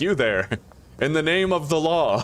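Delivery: high, stern, officious cop voice. Retelling how a cop calls out to the speaker: imitating a cop's stern challenge. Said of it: "when he sees me, it's like".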